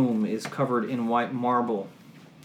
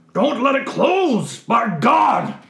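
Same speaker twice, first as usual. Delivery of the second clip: very loud, shrill, high-pitched booming yell; 11 semitones higher, 9 dB louder than usual. Narrator describing a door opening, voicing a voice heard shouting. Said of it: "you hear a voice shout".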